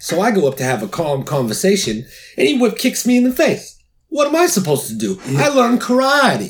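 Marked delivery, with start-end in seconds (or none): 2.4-6.5 very high put-on voice, pitch swinging way up and around. Retelling getting kicked in the face, in a Johnny voice. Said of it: "Was that a great impression of Johnny or what?".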